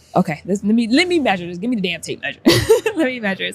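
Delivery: acted mild irritation showing through, a little frustrated. Speaker retells a moment at work, retelling past frustration. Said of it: "you could hear it in my voice a little bit".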